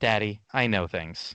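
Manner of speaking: put-on flat delivery. A father retells his three-year-old son's reply to him, imitating a deadpan reply. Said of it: "he just like deadpans right at me".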